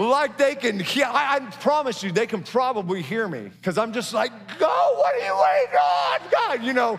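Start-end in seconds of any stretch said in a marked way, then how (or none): 4.6-6.6 high, shrill, raised, swooping, impatient outburst. Imitating himself yelling at a stalled driver, voice going high. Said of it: "all the men's voices go high all of a sudden".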